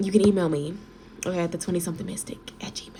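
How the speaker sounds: hushed whisper. A reader signing off to viewers after a reading, whispering. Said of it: "I don't know why I'm whispering".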